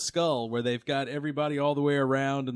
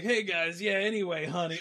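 put-on croaky, raspy elderly woman's voice; 4 semitones higher than usual. Imitating an old Futurama lady talking to somebody: raspy old lady voice. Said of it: "So she'd be like".

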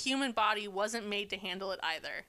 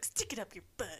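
mock cheeky, sassy, snarky tone with attitude; 7 dB quieter than usual. Imitating the mother-in-law's exact way of saying it: imitating a sassy retort. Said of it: "that's exactly how she says it".

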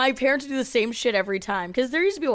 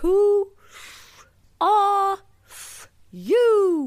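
very high storybook creature voice, stretched-out "you"; 11 semitones higher, 4 dB louder than usual. Recalling a favorite film character: Alice in Wonderland caterpillar voice. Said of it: "the little caterpillar that's like".

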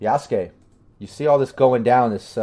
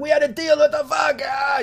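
very high, shrill, frantic panicked voice. A game master voices a dying character turning to the party, panicked, freaking out. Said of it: "He's just freaking out".

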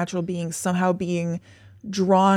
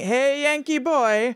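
put-on male yell, higher pitch; 7 semitones higher than usual. Retelling how a man greeted a landed UFO: imitating a man yelling. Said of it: "he started yelling".

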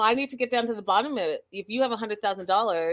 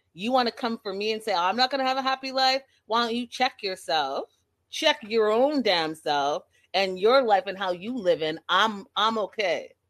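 put-on fed-up, indignant Boston accent. Recapping the show, the speaker acts out Boston John's reply, Boston John impression. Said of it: "you have Boston John saying".

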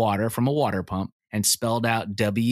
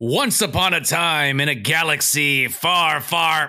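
a little louder, stronger, more confident; 5 semitones higher, 3 dB louder than usual. After a coach asks for more confidence, trying the opening again louder and more confident. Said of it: "A little louder".

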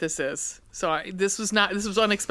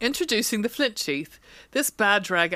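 wandering, wobbly, inconsistent English accent; 2 semitones higher than usual. Reading a product description aloud, in an inconsistent english accent. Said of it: "I'm all over the fucking map in England with this accent".

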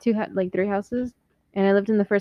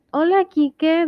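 extremely eerie, high-pitched creepy voice; 8 semitones higher, 6 dB louder than usual. Retelling a woman's greeting in the garage, in mock creepy voice. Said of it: "like in the creepiest voice ever".

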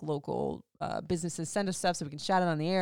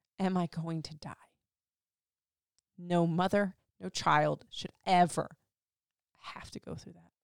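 trying not to cry, holding back tears. Telling friends about a mother whose baby is in chemo, holding back tears. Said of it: "I'm trying not to cry".

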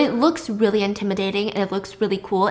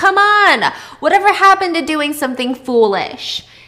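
raised, high, loud yelling; 7 semitones higher, 7 dB louder than usual. Retelling a film scene, a character calling out: imitating someone screaming. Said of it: "he screams out at Sylvia".

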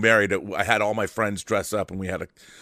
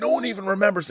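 put-on Irish brogue, pitched very high; 11 semitones higher than usual. Retelling what a man said when asked about a movie, Irish brogue impression. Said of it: "in his Irish brogue".

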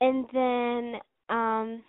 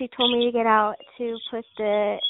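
normal talking voice

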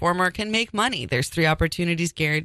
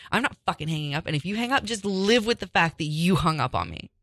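put-on mad, dug-in, angry, heated rant. Retelling a phone argument where the other refused to hang up: imitating her own angry voice. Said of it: "I was so mad".

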